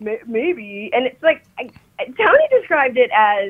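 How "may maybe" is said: put-on low Valley Girl voice, quieter. Imitating an actress's line from the film: deeper surfer girl voice. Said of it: "it was deeper".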